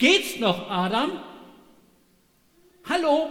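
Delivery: high, loud, exasperated angry yell.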